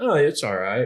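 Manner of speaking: mock feigned indifference. Retelling a reply to a friend: imitating downplaying. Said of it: "I downplayed".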